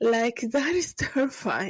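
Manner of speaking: words broken up by laughter while talking. Reacting to a story about companion robots, laughing while talking. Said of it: "I'm sorry that I'm laughing".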